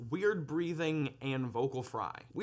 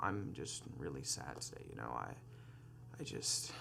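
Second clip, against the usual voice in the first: low-effort creaky vocal fry, very soft and quiet; 12 dB quieter than usual. Demonstrating how speech sounds with vocal fry, speaking in vocal fry. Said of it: "it sounds like this".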